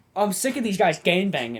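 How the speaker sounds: acted angry outburst. Retelling a nephew's complaint in a game: imitating someone getting mad. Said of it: "and he gets mad".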